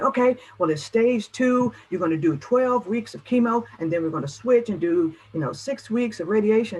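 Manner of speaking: fast, rattled-off speech. Acting out a doctor giving a cancer diagnosis: imitating a doctor talking fast. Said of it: "Slow down".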